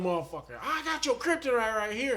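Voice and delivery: high-pitched hollered yell. Retelling an angry man at a Burger King line: imitating a man yelling. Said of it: "So he starts yelling".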